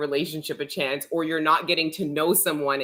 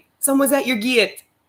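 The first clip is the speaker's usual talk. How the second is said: put-on heavy Jamaican accent, laid on thick; 8 semitones higher, 6 dB louder than usual. Retelling a voice you kept hearing, a lady with a thick Jamaican accent. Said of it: "this thick Jamaican accent".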